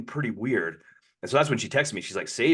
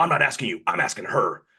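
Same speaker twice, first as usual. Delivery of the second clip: angry, irritated, put-out tone. Retelling a man turning to him, imitating someone mad. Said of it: "He turns to me like all mad".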